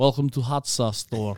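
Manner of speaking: spooky, mysterious vampire-like voice. Retelling how a mysterious shop clerk greeted customers: vampire-like voice. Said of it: "it was almost like a vampire".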